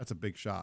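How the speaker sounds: low, dry, play-acted grown-up deadpan tone. Retelling what a three-year-old said after making a shot: imitating a toddler's deadpan tone. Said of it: "In that tone?".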